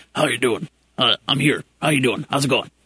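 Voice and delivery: ghoul character voice. Pitching an app idea, the speaker plays the summoned character answering: Beetlejuice impression. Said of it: "That's a pretty good Beetlejuice impersonation".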